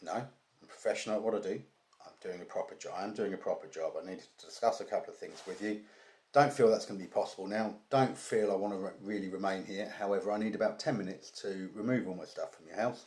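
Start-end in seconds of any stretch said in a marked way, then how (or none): none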